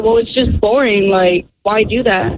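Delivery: ordinary talk, nothing marked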